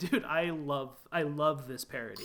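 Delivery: ordinary talk, nothing marked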